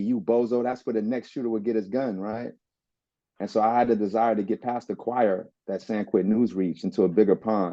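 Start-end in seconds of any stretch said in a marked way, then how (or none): none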